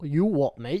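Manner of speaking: bad attempted Australian accent that comes out British. Joking about what counts as a man, the speaker tries an accent; failed Australian accent attempt. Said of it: "That was British. I was trying to do Australian".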